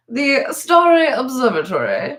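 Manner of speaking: put-on posh, snobbish, high swooping voice. Reading a text about a very wealthy person: put-on snobbish voice. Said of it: "I have to say it in my snob voice".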